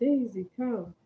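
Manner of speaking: bright happy calling out. The narrator calls her dog Daisy across the room in a joyful calling voice. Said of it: "lift my voice into a joyful".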